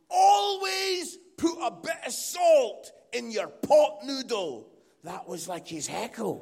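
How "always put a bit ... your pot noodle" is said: slow, loud, drawn-out shouting. Retelling a heckle from the back of the room: imitating a shouted heckle. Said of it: "He just shouted".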